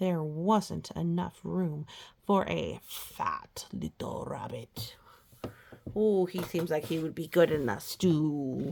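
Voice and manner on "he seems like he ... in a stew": sinister storybook villain voice, "stew" drawn out with menace. Reading a rabbit story aloud, a line in a villain voice. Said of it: "that's my villain voice talking".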